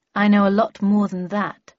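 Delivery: ordinary delivery, nothing marked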